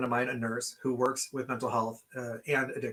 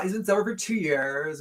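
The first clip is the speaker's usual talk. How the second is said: high, derisive, mocking put-on Valley Girl voice; 5 semitones higher, 4 dB louder than usual. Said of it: "this macroaggression of the Valley Girl voice".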